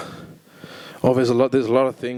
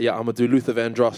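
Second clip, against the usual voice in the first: ordinary talk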